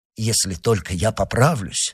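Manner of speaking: plain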